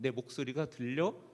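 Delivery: plain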